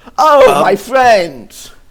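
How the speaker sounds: loud, high-pitched called-out voice. Voicing a shopkeeper greeting old customers as friends: Manny voice. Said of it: "you see Manny emerge and go".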